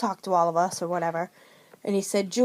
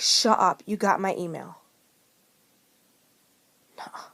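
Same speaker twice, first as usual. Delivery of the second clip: acted tearful crying, sounding disbelieving. Retelling being called up on stage, the speaker reenacts their tearful disbelief. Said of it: "Tears coming down my face".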